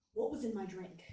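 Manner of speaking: usual speaking voice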